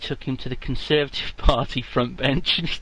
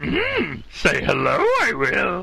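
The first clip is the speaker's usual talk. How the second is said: put-on old creature voice, higher; 4 semitones higher than usual. A host takes voice requests and obliges with a Yoda voice. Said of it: "The media wants Yoda".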